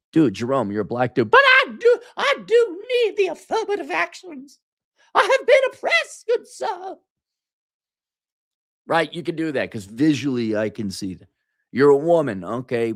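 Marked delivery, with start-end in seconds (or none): 1.3-6.9 put-on, very high-pitched Southern belle accent. Answering a co-speaker's objection, slip back into the mock Southern belle voice. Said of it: "I have become a Southern belle debutante".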